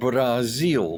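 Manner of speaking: put-on Brazil pronounced in a South American accent. Showing how South Americans say it, South American accent on 'Brazil'. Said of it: "that's how they say it".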